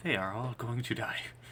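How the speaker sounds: muttering under breath. Voicing a character's aside about the group: muttered under his breath. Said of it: "says under his breath".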